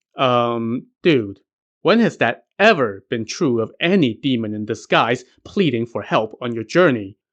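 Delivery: ordinary delivery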